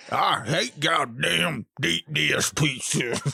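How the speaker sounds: slow, very drawn-out Southern American accent. Redoing a line because it's funnier with the southern american accent. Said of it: "It's even funnier with the southern".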